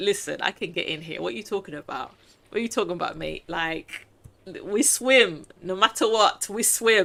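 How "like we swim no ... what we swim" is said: normal talking voice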